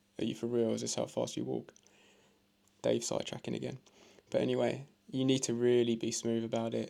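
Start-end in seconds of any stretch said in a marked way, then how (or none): 0.2-1.7 mocking, sarcastic, swooping tone. Retelling walking in slow motion beside the missus: retelling a sarcastic jibe. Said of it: "sarcastically beside her".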